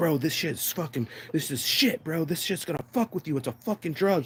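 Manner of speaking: put-on furious, high-pitched, heated scolding yell. Retelling a car ride, the speaker imitates a friend yelling at him. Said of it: "He's yelling at me in the car".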